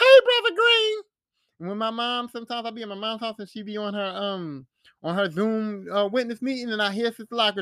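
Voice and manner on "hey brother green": cheery voice, very high pitch and very loud. Remembering an older congregation member's greeting: imitating Sister Lockridge's voice. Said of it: "she used to have this voice here".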